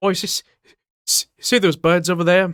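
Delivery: loud Cockney accent. Friends trading british slang, one speaking in a cockney accent. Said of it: "Cockney speak, I believe".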